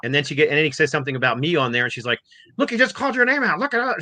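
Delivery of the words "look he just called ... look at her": mad, pointed, angry griping, very high-pitched. Retelling a wife's reaction to a video: imitating someone angry. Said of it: "She was all mad".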